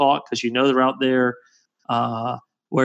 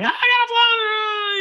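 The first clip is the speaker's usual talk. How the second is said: very high, stretched-out, drawn-out yelling. Recounting how his fishing partner kept yelling at him; retelling a yell. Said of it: "he's yelling at me".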